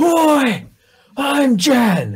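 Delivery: very high, loud, swooping aggressive yell. Player character stands up to declare himself to peasants, aggressive shout. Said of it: "aggressively shout".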